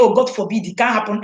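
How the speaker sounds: ordinary talk, nothing marked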